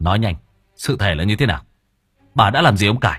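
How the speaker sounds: bullying, scolding tone. The narrator keeps demanding answers from vi about mr. cải; browbeating. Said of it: "Tôi tiếp tục nạt nộ".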